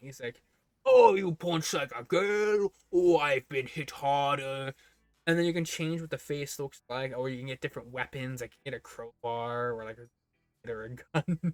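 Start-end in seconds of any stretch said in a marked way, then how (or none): 0.9-4.7 loud, swooping, mocking, taunting put-on British accent. Describing a punchable face that insults you for punching weakly, british accent. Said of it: "he has a British accent".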